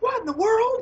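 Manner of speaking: very high-pitched alarm. Imitating how she reacted to a crisis, in a really high-pitched voice. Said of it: "She got this really high pitched voice".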